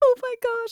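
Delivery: acted-out, very high, frantic, panicked freak-out. Retelling a movie scene where a character panics: imitating a character freaking out. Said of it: "starts freaking out".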